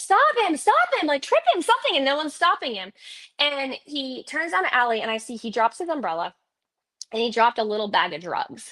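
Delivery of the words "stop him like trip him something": very high, shrill, rapid, desperate frantic scream. Retelling chasing a man down an alley, begging people to help: retelling a frantic scream. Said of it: "I'm literally screaming like".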